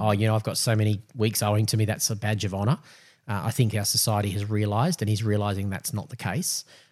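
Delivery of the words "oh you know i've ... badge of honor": usual speaking voice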